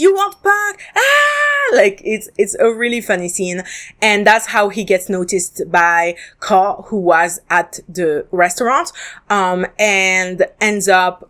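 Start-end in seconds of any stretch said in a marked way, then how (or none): 0.0-1.8 put-on, very high, frenzied yell with stretched "ah". Retelling a TV scene where a character yells at an old dude: imitating someone yelling. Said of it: "He starts yelling at him".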